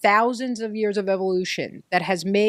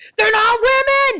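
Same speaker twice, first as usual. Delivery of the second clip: mock screaming, higher and louder; 14 semitones higher, 8 dB louder than usual. Retelling a sudden outburst while walking with a friend: retelling own past screaming. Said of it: "and then I just start screaming".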